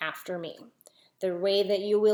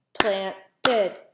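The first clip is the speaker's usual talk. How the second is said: each syllable separated and clapped out; 4 dB louder than usual. Showing the extra syllable while clapping: clapping out the syllables. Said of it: "How about planted?".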